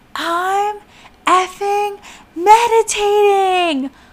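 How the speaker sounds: very high, shrill, top-of-the-lungs screaming yell. Recounting screaming at her while meditating, retelling the scream. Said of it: "I screamed my head off".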